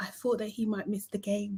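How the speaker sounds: barely audible, very quiet, hushed voice. Retelling a woman's answer to a question, imitating the quietest voice ever. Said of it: "in the quietest voice ever".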